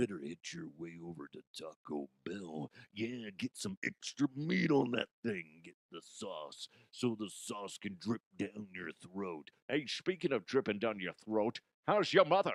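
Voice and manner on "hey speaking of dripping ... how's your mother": put-on Scottish accent, faster pace. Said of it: "God damn it, Connery".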